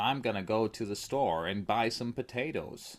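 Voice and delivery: put-on Hollywood-style American movie accent. Showing what an American accent sounds like from movies: put-on American accent. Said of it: "I know that American accent sounds like this".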